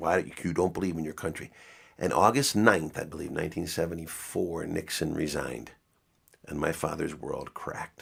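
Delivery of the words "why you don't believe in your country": mock-furious, faster. Recalling the father's reaction to a friend deserting to canada: retelling father's fury. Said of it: "my father was livid".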